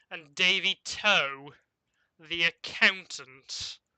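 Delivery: sneering, scornful tone. Voicing a fortune teller greeting each adventurer in turn: sneering, nose curled in disdain. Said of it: "her nose kind of curls a little bit and says".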